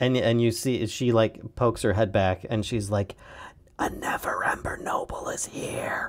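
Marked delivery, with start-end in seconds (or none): 3.8-6.1 slow, hushed, theatrical whisper meant to carry. Retelling a woman poking her head back in to announce a guest, stage whisper. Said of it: "you hear it in like a stage whisper".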